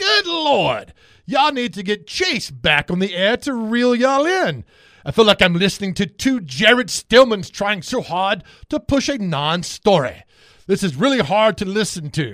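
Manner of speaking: grating, overdone British reading voice. Reading aloud a comment from 3696, in a very british, annoying voice. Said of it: "I'm going to read it like a very British, annoying voice".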